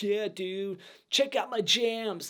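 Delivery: slow, lazy, laid-back stoner drawl. Imitating how an actor talks in a movie: stoner accent. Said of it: "He has the stoner accent going down. Like".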